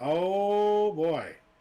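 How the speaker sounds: high, loud, mock-ominous "oh boy". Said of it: "And it's like".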